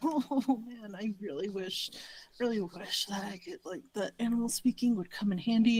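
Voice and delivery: quiet muttering under breath. Playing a character who mutters a wish near a barking dog: muttering under breath. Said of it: "I'm saying this under my breath".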